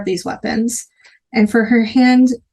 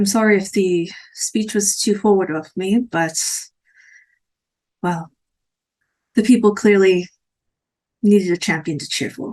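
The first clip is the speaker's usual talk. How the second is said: flat, lifeless, emptied-out, soulless character voice; 2 semitones lower than usual. Voicing a character who apologizes to the party: soulless character voice. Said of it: "Trying to remember my soulless voice".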